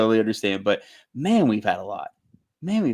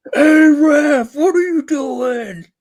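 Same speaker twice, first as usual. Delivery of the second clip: very high, very slow, shrill, drawn-out screaming; 8 dB louder than usual. Retelling how someone screams at the referee during games: imitating Dylan screaming at the ref. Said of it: "he's screaming at him".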